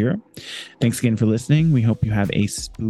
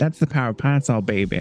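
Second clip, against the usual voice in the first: sassy, affected delivery; 2 semitones higher than usual.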